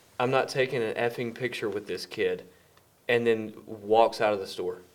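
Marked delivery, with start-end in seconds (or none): none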